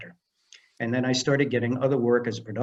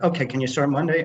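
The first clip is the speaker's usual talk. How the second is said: plain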